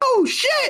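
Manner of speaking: very high startled yelp, blurted out. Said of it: "they're like".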